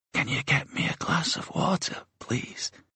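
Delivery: very high, very small, tiny voice. Narrator reading Anna's line in a story, in a very small voice. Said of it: "in a very small voice".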